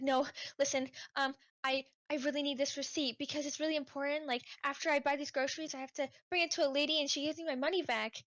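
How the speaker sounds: put-on flustered, anxious, urgent, panicked woman's voice. Retelling a shopper begging to keep her lost receipt, imitating a panicking woman. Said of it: "she starts panicking".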